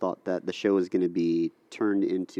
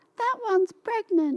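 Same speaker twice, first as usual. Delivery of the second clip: voice pitched way up high. Retelling what the scare-zone performers said to the other speaker: Surreal's really high-pitched voice. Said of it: "Surreal had the really high-pitched voice".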